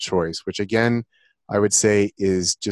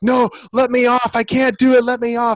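screaming, high-pitched; 14 semitones higher, 4 dB louder than usual. Describing riders at the top of a wooden roller coaster, imitating people screaming. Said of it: "some people are screaming like".

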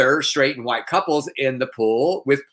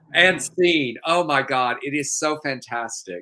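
plain

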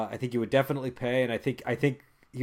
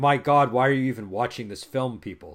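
put-on scornful, exasperated, fed-up outburst. Retelling how a director sounds on his commentary: imitating an exasperated director. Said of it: "is how he sounds".

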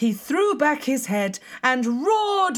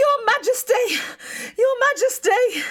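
very high, loud calling shout; 12 semitones higher than usual. The court jester bursts into the throne room to the king, shouted. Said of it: "shouted the court jester as he burst into the throne room".

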